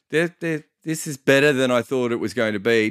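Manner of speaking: plain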